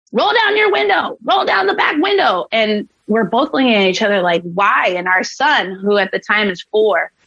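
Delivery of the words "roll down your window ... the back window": very high, shrill screaming. Retelling how an officer got out and started screaming at them, retelling his screaming. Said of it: "starts screaming at us".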